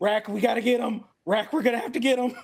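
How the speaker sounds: very high, very loud shout. A game character running toward an ally, yelling over his shoulder. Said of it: "he's just like yelling over his shoulder".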